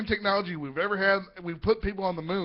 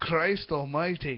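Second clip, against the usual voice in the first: put-on Scottish accent, lower; 4 semitones lower than usual. Showing how a key phrase triggers a put-on accent: scottish accent. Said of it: "that phrase automatically goes into Scottish accent".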